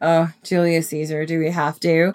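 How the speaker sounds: put-on reluctant voice. Retelling own past lack of interest in a topic: imitating own past reluctance. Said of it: "I was not super into Julius Caesar".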